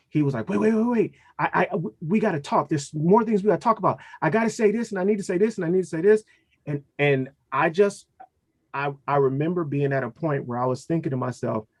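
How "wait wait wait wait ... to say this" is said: nonstop rapid-fire talking, high and rushed. Recalling the talk about separating, the speaker imitates the boy talking very fast. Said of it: "he started talking so fast".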